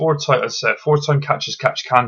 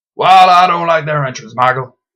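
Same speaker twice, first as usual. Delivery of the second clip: bad put-on Texan commentator voice, higher and louder; 5 semitones higher, 9 dB louder than usual. Imagining a commentator reacting to a tag team's call-up: awful JBL impression. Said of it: "my awful J B L impression".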